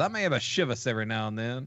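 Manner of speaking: thick, heavy Alabama country voice. Retelling what a legislator said about homebrew: very country tone. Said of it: "in his very country tone says".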